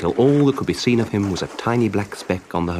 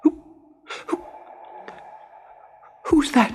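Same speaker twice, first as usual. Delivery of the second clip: stuttering, shaky, trembling with fear; 3 dB quieter than usual. Narrating, reading the main character's question to a low voice in the gloom: stammering, shaking with fear. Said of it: "Stammered Pinocchio, shaking with fear".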